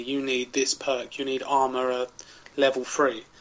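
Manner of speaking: ordinary talk, nothing marked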